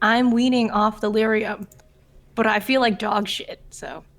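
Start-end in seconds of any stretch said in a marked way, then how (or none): none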